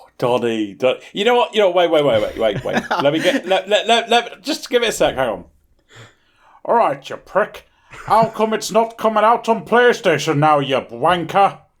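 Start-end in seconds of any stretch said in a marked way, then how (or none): 6.7-11.5 cheeky, put-on punk-style voice, pitched up. The speaker addresses Donny, slipping into a punk accent impression. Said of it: "What accent was was that supposed to?".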